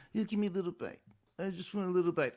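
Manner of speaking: high, cutesy, put-on babyish pleading voice. Recounting a woman being fed by a man, imitating her baby voice. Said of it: "she gave that baby voice".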